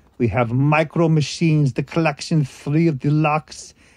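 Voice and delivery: put-on German accent. Showing off a micro machines collection, in a put-on german accent. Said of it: "Why am I doing it with a German accent?".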